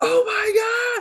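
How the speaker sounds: very high, loud shrieking scream. Retelling a show where a kid sees his hairy legs: imitating a scream. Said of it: "he starts screaming".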